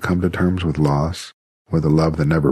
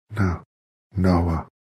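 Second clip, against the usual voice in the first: gasping out words; 3 dB quieter than usual. She lies wounded as Noah kneels beside her, gasping. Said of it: "she gasped".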